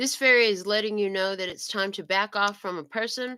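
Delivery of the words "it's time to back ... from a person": ordinary talk, nothing marked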